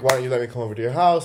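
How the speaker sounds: quick, teasing yet serious, half-joking pushy tone. Retelling how a guy kept insisting on coming over, mimicking a half-joking tone. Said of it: "saying it in like a jokey but not jokey way".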